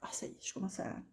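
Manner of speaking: soft, unvoiced whisper.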